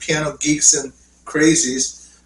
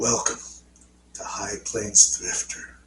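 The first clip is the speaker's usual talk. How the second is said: breathy, whispered, deliberately bad put-on voice; 7 semitones lower, 10 dB quieter than usual. Attempting a self-described worst impression, Clint Eastwood voice. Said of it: "it's my worst impression of um, trying to do Clint Eastwood".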